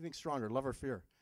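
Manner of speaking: plain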